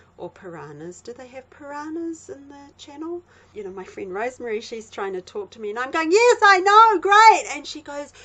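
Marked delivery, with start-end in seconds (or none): 6.2-7.6 very loud, shrill, booming, drawn-out yell. Retelling listening to an MP3 player while a friend talks: imitating own shouting. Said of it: "You're, you're shouting".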